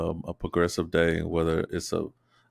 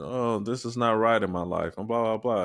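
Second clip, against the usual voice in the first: mock self-pitying moan; 4 semitones higher than usual. Describing not wanting to always complain: imitating a sad person complaining. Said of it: "I just don't wanna be a sad person".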